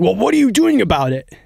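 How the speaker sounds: acted angry shouting. Retelling how people grew angry at them, retelling an angry raised voice. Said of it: "they were like raising their voice".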